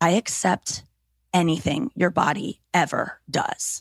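very slow, drawn-out whisper. Retelling what a partner said: imitating a whisper. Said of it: "he just whispered in my ear".

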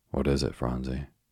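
plain

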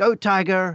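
put-on high, small little boy voice. Retelling a little boy in the gallery calling out, in a small little voice. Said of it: "in a small little voice".

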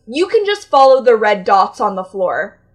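loud, condescending, talking-down tone. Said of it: "In that tone".

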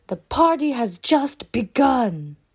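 fake American accent, calling out. Telling of a robber firing at the ceiling, shouting in fake American accent. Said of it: "disguises his voice to sound like an American person, and shouts in English".

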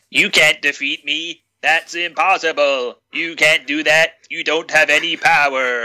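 robotic, machine-like alien voice. Act out the samurai ghost protesting against the family's power, in a Dalek voice. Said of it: "the samurai talks like a Dalek".

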